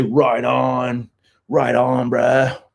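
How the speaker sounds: put-on California surfer accent, mock surfer dude voice. Joking about own way of talking: put-on california surfer accent. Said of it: "I say".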